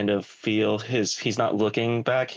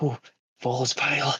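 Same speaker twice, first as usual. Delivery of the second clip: whispered aside, higher; 4 semitones higher than usual. A player describes their character finding a vial and whispering to himself. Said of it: "he'll whisper to himself".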